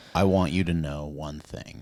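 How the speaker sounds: very low, hushed, velvety, chocolatey, slow vocal fry. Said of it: "himbo valley vocal fry voice".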